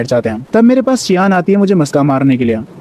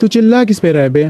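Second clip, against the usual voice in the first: usual speaking voice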